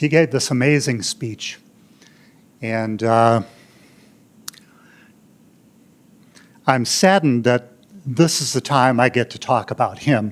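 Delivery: choked-up, tearful voice fighting back tears. Remembering a late best man in a speech, choked up with emotion. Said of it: "sorry, I gotta pull it together".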